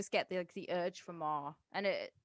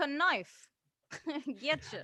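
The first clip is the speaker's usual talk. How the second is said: put-on tough-guy New York accent; 8 semitones higher, 4 dB louder than usual. Asked to do a New York accent, a speaker does a tough New York accent. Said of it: "This is my tough street, New York".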